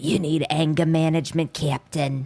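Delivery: deep whispery gravel voice. Recapping a TV episode, quoting Tucker's line in his deep whispery New York voice. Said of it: "deep, whispery New York gravel voice".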